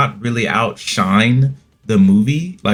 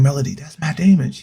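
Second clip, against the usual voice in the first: acted-out whisper; 4 semitones higher than usual. Recounting what he said to his lady about the actor; retelling a whisper. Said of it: "I whispered it to my lady".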